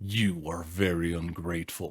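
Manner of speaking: dreadful, fearsome voice. Narrator reading the beast speaking to the merchant who gathered his roses: terrible voice. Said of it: "said the beast to him in a terrible voice".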